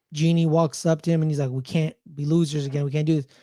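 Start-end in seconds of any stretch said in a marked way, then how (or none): none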